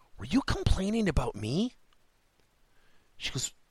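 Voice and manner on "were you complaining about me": whisper, higher pitch. Retelling asking the young lady at the counter a question: retelling a whisper. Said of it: "And I whispered it".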